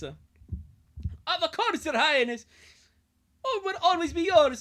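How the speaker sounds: put-on Scottish accent. Reading a story aloud, voicing a character answering thanks, in a scottish accent. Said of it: "now do I do the Scottish voice for this guy?".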